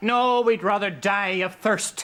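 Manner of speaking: sarcastic tone. Declining an offered cup of tea: sarcastic. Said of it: "Father Jessup was being a bit, uh, sarcastic".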